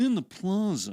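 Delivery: fancy, affected put-on voice. Announcing a Friday music event, doing a Justin Kazeppa impression. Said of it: "impression of Justin Kazeppas being fancy".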